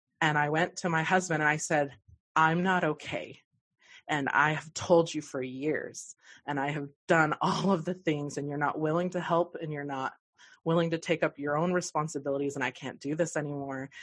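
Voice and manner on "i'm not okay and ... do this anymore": plain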